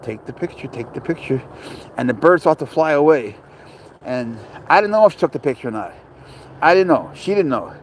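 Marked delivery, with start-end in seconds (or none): 0.0-1.4 hushed, soft, repeated whisper. Retelling how a bird landed in front of them, the speaker is retelling a whisper. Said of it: "like I'm whispering".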